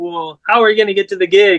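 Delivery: ordinary delivery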